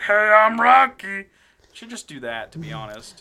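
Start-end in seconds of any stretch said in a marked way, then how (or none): 0.0-1.3 very loud, high, bad movie-star voice, belted. Making fun of impressions, doing it badly: bad Stallone impression. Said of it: "making fun of Stallone impressions and we were doing it bad".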